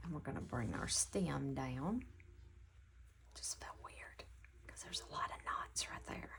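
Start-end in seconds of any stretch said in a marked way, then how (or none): 3.3-6.3 hushed whisper, quieter. Working out knots while stitching, talking to viewers, whispering. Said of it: "Don't know why I'm whispering".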